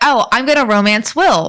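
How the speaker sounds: ordinary delivery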